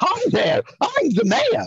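pitched way up with swooping intonation. A voice actor demonstrates the mayor voice from the ads: Mayor McCheese voice. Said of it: "And this voice".

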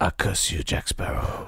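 whispered, shaky, poor put-on Spanish accent. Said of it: "can't do a very good Javier Bardem accent".

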